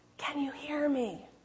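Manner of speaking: soft, hushed, barely audible near-half-whisper. Retelling a joke about a husband testing his wife's hearing: imitating a low half-whisper. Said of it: "in a very low, almost a whisper of a voice".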